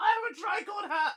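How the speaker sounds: thrilled exclamation, very high and very loud. Voicing a character who just got a new hat: excited character shout. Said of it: "of excitement".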